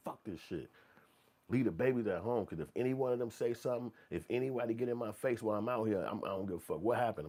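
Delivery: put-on, wild, worked-up, crazed, heated rant. Imitating a man ranting after others tell him to calm down: imitating someone going crazy. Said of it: "he going crazy".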